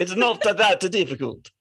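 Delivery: Italian accent, overly Transylvanian-sounding. Speaker tries out an Italian accent for the others, sounding Transylvanian. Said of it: "That sounded way too Barovia or Transylvania".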